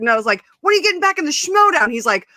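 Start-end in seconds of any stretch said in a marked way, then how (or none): 0.6-1.9 put-on yell, higher. Retelling the celebrity shouting back across the hallway: imitating someone screaming back. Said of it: "we're screaming at each other".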